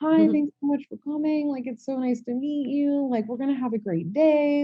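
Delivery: very high, sugary, super sweet welcoming voice. Speaker recreates how she greeted a woman coming out early, in a soft, super sweet voice. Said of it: "soft, super sweet voice that I greet everybody with".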